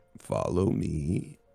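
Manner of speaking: speaking in a whisper. Playing a character leading the group onward: whispering. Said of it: "I just kinda whisper".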